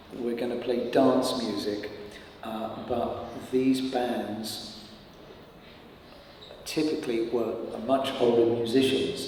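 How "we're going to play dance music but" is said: usual speaking voice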